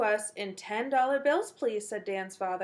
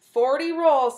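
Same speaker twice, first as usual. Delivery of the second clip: very loud, beaming, proud tone; 3 semitones higher, 9 dB louder than usual. Dan answers his mother after counting the pennies, proudly. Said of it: "said Dan proudly".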